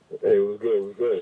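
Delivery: loud, booming radio host voice. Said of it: "for the radio voice".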